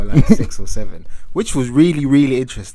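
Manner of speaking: very excited, rising voice.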